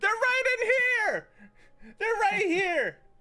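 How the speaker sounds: piercing shrill cry. The narrator voices someone shouting from outside about the heroes: shrill voice. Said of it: "a shrill voice echo from outside".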